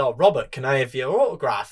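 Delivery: put-on broken English with Italian accent. Retelling a fan asking for an autograph: imitating broken Italian-accented English. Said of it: "his broken I-, I-, English, 'cause he was Italian".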